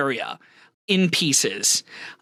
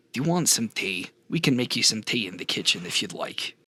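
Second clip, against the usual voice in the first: very low, really quiet, hushed voice; 8 semitones lower, 5 dB quieter than usual. Game master voicing a huge character pulling you into a hug, speaking really quietly. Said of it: "just really quietly says".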